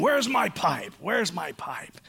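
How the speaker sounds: slow, exasperated, fed-up, frustrated voice. Remembering dad searching the house for his pipe, imitating frustrated dad. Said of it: "marching frustrated through the house saying".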